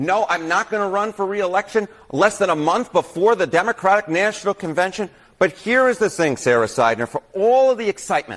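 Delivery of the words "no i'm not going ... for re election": ordinary delivery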